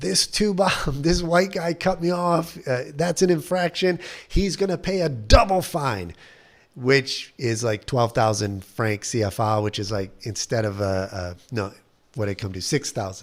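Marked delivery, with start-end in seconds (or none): 0.0-6.1 high, furious, angry shouted yelling. Retelling a man complaining at a police station desk, retelling a yell. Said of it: "he starts yelling".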